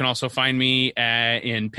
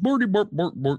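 pitched-up fake Swedish gibberish, puppet chef voice; 7 semitones higher than usual. Describing the Swedish Chef to the other speaker: Swedish Chef voice. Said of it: "The Swedish Chef ... and he goes".

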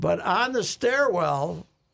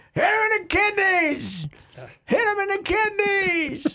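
imitated angry yell, much higher, louder; 5 dB louder than usual. Recalling a guy behind them at a fight, retelling an angry shout. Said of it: "An angry crowd".

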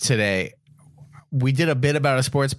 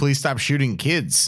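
normal talking voice

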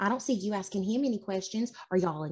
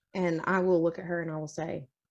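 ordinary delivery

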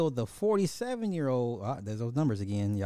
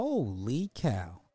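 showy put-on exclaiming voice, "holy" stretched out; 3 dB quieter than usual. Reacting to a hard-to-pronounce name, doing a Harry Caray impression. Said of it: "In my Harry Carey voice".

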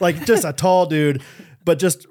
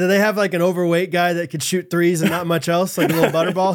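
ordinary delivery

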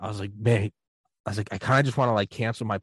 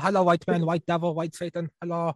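put-on Cantonese accent, pitched up; 7 semitones higher than usual. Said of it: "the American Chinese Cantonese accent".

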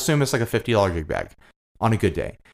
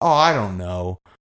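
put-on Fresno accent, lower; 6 semitones lower than usual. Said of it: "that's a Fresno accent".

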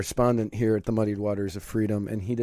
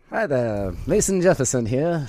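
1940s-style announcer voice; 3 semitones higher than usual. Introducing a character he created for his videos, in a 1940s announcer voice. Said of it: "he talks like a 1940s announcer".

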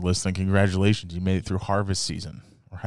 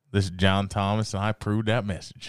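usual speaking voice

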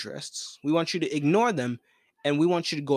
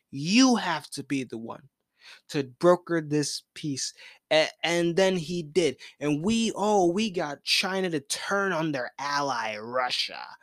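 plain

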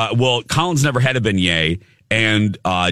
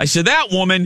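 plain

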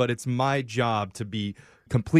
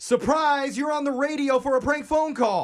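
very high, enthusiastic shouted yell of surprise; 14 semitones higher than usual. Showing how the surprise should be shouted after a countdown: enthusiastic shouted surprise. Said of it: "I just want you to hear how I say it".

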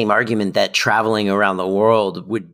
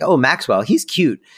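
put-on nonchalance, higher pitch; 5 semitones higher than usual. Describing a scene where two characters trade barbs, mock-nonchalant. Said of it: "Morgan just very nonchalantly goes like".

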